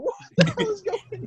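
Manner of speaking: baffled, high-pitched tone.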